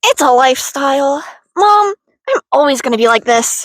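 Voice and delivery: put-on emo voice, done as a bit. Joking that emo is a lifestyle, telling Mom: put-on emo voice. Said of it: "I'm really good at the voice".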